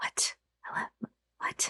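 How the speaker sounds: barely audible, very quiet whisper. Gentry answers a mother's voice heard in the mind: very quiet whisper. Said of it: "I think I whisper very quietly".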